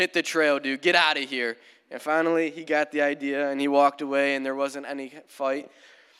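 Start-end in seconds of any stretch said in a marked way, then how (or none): 0.0-1.6 put-on stern dad voice, louder. Retelling how he and another guy told a man to leave, in a put-on stern dad voice. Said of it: "we put on like a stern dad voice".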